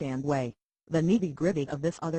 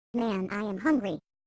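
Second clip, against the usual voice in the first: ventriloquist's puppet voice; 4 semitones higher than usual. Explaining a talking puppet show, voicing the puppet's line in a puppet voice. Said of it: "when the puppet says".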